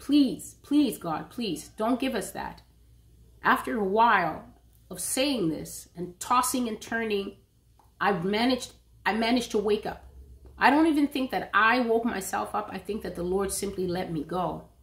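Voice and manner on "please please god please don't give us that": mock earnest, strong, insistent begging tone. Recounting a dream, acting out begging God, retelling strong begging. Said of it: "I was strongly begging the Lord".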